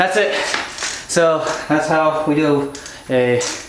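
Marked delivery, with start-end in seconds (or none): 1.1-3.4 slow, winded, out-of-breath talk. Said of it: "oh, I'm out of breath".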